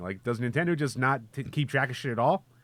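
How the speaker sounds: plain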